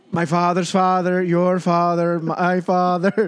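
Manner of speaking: bad put-on Irish or Scottish brogue. Joining a group bit about drinking beer, in a bad Irish/Scottish accent. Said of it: "devolved into bad Irish / Scottish accents".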